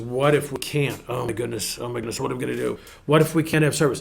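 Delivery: fearful, dreading tone. Showing one of two ways to ask about church services: asking in dread. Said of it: "I can say it two ways... a question of dread".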